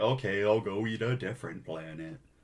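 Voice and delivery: play-acted soft, sad, hangdog, sulky mopey voice. Retelling a comic scene, voicing Galactus giving up: sad mopey Galactus voice. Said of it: "Like a sad, mopey dog?".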